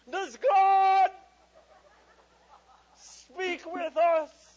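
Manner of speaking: acted grandly pompous cry, very high and loud. Father retelling his youngest child's bedtime question, mock-pompous tone. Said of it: "That's in a very pompous tone".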